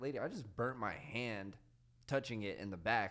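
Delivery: ordinary talk, nothing marked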